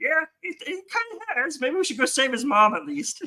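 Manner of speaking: very high, slow, drawn-out frog-puppet voice. Acting out what the monks could have said, in a frog-puppet voice. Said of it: "Was that a Kermit voice?".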